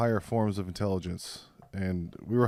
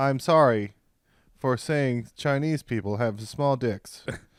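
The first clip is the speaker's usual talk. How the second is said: machine-like, robotic AI assistant voice; 3 semitones higher, 4 dB louder than usual. After a co-host says they must do one, the speaker performs: ChatGPT robot voice. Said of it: "a Chat G P T robot voice".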